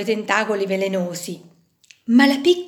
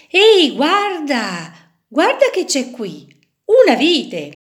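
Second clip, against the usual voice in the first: high-pitched exclaiming call; 5 semitones higher, 4 dB louder than usual. A fisherman hauling in his net, exclaiming. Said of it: "esclamò un pescatore".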